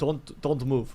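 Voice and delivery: put-on Russian accent. In a comedy bit, giving a Russian massage, in a Russian masseur accent. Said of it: "Give us a Russian massaging Deshaun Watson".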